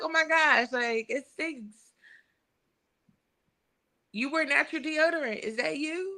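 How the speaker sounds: breezy, gentle, lighthearted teasing tone. Acting out how a cast member told a friend she stinks: imitating Jessel's lighthearted tone. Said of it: "with her tone".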